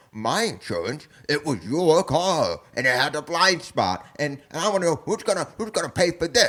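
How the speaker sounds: upset, high-pitched voice. Retelling a movie scene where Biff complains about the wrecked car: imitating upset Biff. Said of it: "he's all upset".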